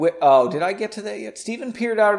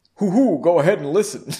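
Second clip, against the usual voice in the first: stern tone done as a put-on voice; 4 dB louder than usual. Joking after reading a line, doing a Howard Stern impression. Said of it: "That's Howard Stern".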